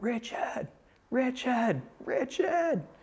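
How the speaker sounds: mild mock yell, pitched very high, calling out. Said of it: "literally yelled his name out three times".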